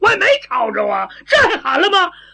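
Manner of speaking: high, loud, protesting voice. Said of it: "嗓门够大的了".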